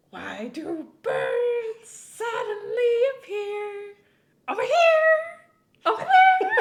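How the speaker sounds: very high, slow, swooping voice, stretched out and loud. Doing a voice to make Gregor laugh: Marge Simpson voice. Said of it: "It's a good Marge voice".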